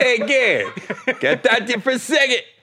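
terrible hybrid Boston accent, pitched very high. Speaker tries a Boston accent of a non-native English speaker: bad Boston accent. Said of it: "I just gave a Boston accent of a guy that's English is a second language".

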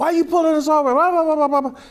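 very high-pitched, loud hollering woman's voice. Retelling how a woman in the car yelled at a cop: imitating a woman yelling. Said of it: "starts yelling at the cop".

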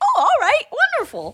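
very high, keen, eager cartoon-character voice. Asked what Phantom's voice sounds like, the speaker demonstrates: eager Goofy-like voice. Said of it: "like kind of Goofy's voice".

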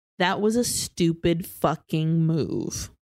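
put-on menacing tone. Recapping a scene where a man speaks as the others reach the elevator, mock-menacing. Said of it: "menacingly says".

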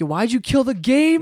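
high, loud screaming yell. Retelling confronting a kid who ended the game early: retelling own screaming. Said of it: "I'm screaming at him".

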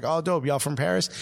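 ordinary talk, nothing marked

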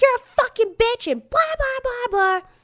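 very high-pitched, shrieking, insulting scream. Retelling a screaming fight heard by a driver: imitating a screamed insult. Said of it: "back and forth being like".

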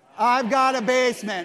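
very loud, slow, full-conviction delivery. Leading a congregation in a loud confession: saying it loudly with conviction. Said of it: "say it loudly".

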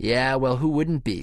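chuckling, laughing, easy tone. Babs answers the narrator, with a laugh. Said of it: "said Babs with a laugh".

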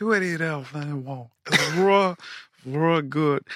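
slow, hoarse, worn-out, voiceless croak. Quoting a man in commercials who had lost his voice, imitating a man with no voice left. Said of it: "he had no voice left".

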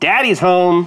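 big, loud, booming delivery. Playing a character who comes in big and loud: big and loud. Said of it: "come in big and loud and just be like".

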